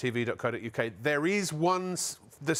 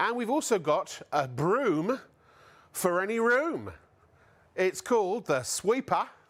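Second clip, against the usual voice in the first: put-on New Zealand accent; 4 semitones higher than usual. A show host previews an upcoming product in a New Zealand accent for his Kiwi guest. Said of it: "with a New Zealand accent".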